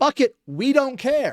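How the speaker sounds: mock careless Hollywood voice, high, slow, dismissive drawl.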